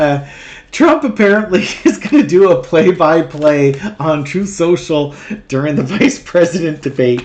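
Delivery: speaking with leftover laughter still in the voice. Host [name] opening his tarot show with news, still laughing. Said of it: "I'm still laughing".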